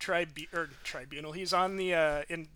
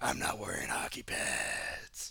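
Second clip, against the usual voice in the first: mocking, very low, slow put-on voice. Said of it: "make fun of him using the voice".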